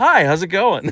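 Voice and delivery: easygoing, high, cheery casual tone. Retelling smiling at a man while walking past him, acting out a smiley greeting. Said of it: "I smiled".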